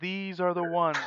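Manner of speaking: very loud, booming, carrying voice. Narrator voices a character as the players approach; speaking really loudly. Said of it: "really loudly again".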